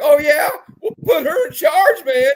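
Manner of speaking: shrill, very loud, high-pitched freaking out. Retelling a movie character's reply, imitating someone freaking out. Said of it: "He's just like having a cow".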